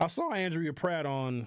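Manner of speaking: breaking voice, cracking mid-line. A show host inviting local alders on air, voice cracking. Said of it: "My voice just cracked".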